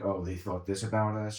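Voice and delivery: ordinary talk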